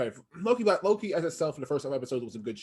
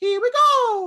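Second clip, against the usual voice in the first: shrill, booming, high belted cartoon cry, "go" stretched; 11 dB louder than usual. Retelling what he said at work when a character appeared on screen, Mario voice. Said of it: "Let me do the Mario voice".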